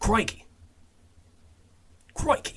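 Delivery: fake, badly done Australian accent, pitched high. Speaker tries an accent before heading down under, bad australian accent. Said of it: "I can't fucking do it".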